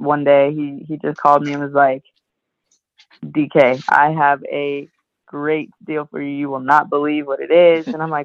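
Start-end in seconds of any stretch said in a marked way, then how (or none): none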